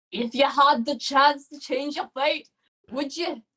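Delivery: put-on Scottish accent, belted out at full blast. Player attempting the Scottish accent they wanted for Lou. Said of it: "I wanted to give Lou a Scottish accent".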